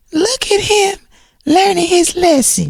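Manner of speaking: very high-pitched voice, pushed way up. Retelling what Tisha said to Kimmy: imitating Tisha's high voice. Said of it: "in her high voice".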